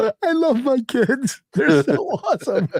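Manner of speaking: high, drawn-out, blubbering crying speech. Retelling a parent crying while someone scolds them: imitating someone crying. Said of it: "over there crying, going".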